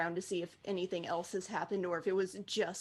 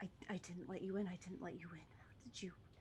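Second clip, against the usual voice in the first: very soft, quiet mumble under the breath; 14 dB quieter than usual. Voicing a character who hasn't noticed the others yet, muttering to himself. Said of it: "just muttering to himself".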